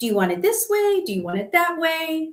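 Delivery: high, sing-song mock cutesy voice. Retelling a woman in a bikini asking a man how to tan, in a mock cutesy voice. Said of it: "she's trying to play kind of cutesy".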